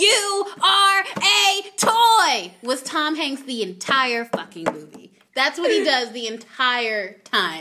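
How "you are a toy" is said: loud, high, very slow, stretched-out yell. Act out the part in Toy Story where he yells, imitating Tom Hanks yelling. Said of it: "part where he yells".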